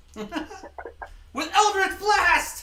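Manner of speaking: high, loud laughing cry.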